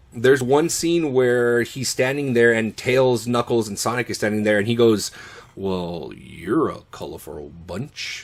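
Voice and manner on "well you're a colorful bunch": low, hushed, soft movie-star voice. Describing a scene with Tails, Knuckles and Sonic, the speaker quotes Shadow in a Keanu-esque voice. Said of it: "in that very much the Keanu-esque voice".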